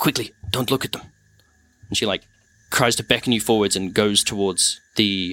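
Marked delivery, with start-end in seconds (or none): 0.0-1.0 nervous, hurried, fast, anxious delivery. Narrating a scene, the speaker voices a woman urging you to follow: anxious. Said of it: "she seems anxious".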